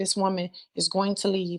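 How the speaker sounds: ordinary delivery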